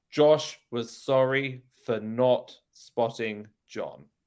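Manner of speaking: slow, careful British accent, r dropped before consonants. Showing a learner how to say the sentence: British accent.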